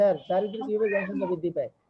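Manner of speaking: ordinary talk, nothing marked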